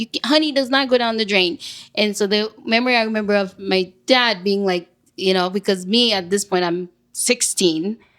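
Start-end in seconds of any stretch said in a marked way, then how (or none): 0.0-1.6 mock furious, high screaming, right up close. Retelling being screamed at while doing the dishes: imitating someone screaming. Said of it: "in my face screaming".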